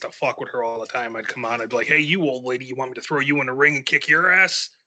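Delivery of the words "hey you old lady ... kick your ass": taunting, mocking tone. Retelling how he taunted a fan from the ring: heel wrestler's taunt. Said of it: "when I was a heel".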